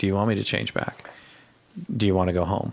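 put-on deflated, quiet, sad voice. Discussing a scene, quoting him when he gets deflated; mimicking a deflated tone. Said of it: "when he gets deflated and he's like".

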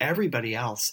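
ordinary delivery

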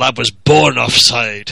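put-on gruff Glaswegian accent. Retelling Ferguson answering an ITV pundit's question, gruff Glaswegian Ferguson voice. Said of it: "in his gruff Glaswegian brogue".

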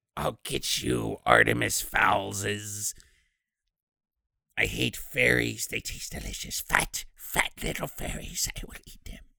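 whispered voice of a bad creature. Mocking Opal's voice acting in a talk about it, in a shitty Gollum voice. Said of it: "her voice acting was just a shitty Gollum".

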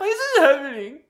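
put-on sloppy drunk sobbing. Describing weeping when sick drunk, imitating sloppy drunk crying. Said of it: "that was a really good impression".

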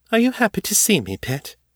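airy, teasing, playful, very high. Ava questions Morgan, whom she calls Pitt, asking lightly. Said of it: "Ava asked lightly".

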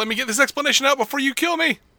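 mock quick trembling villain voice. Describing a villain's reaction in a scene: imitating Lex, fast and shaky. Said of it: "a bit fast and shaky".

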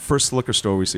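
plain

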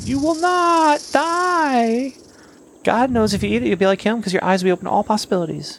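very high, devilish villain voice with die stretched out. Acting out the garden scene, answering the woman in a Satan voice. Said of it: "It's a good Satan voice".

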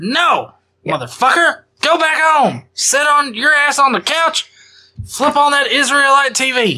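put-on high-pitched backwoods hillbilly accent. Retelling a Bible story, one man scolding another to go home; hillbilly voice. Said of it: "put in a very hillbilly type of context".

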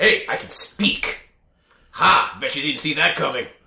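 silly, ridiculous fantasy dwarf wizard voice. A humanoid dog character suddenly speaks to the players, in a wizard dwarf voice. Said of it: "he sounds like a wizard dwarf".

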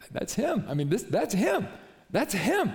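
nervous, starstruck, high-pitched delivery. Retelling a follower seeing Jesus walk by: imitating a nervous Andrew. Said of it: "all nervous".

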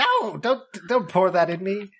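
screeching character voice. Answering the player's idea of pouring it into him, Florian screeching. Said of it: "Florian screeches".

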